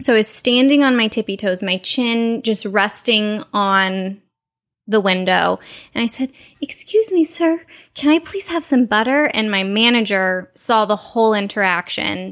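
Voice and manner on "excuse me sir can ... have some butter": sweet, high princess voice.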